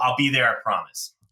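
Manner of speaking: mock solemn, serious delivery. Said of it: "gets very serious and says".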